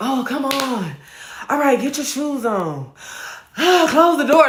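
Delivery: very high irritated voice. Retelling how they talked to their young son: imitating own irritated voice. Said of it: "I'd be talking to him like I'm irritated all the time".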